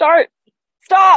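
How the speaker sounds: very high-pitched yell. Retelling being yelled at with directions while driving: imitating someone yelling. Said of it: "you're yelling at me".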